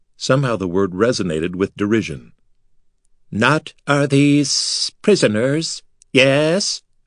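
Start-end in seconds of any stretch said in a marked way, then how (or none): 3.3-6.8 slow, high, hissing alien creature voice. Narrator voices one of the giant silverfish creatures speaking, in a hissing voice. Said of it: "said in a hissing voice".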